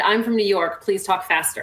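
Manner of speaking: ordinary talk, nothing marked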